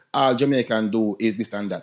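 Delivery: ordinary delivery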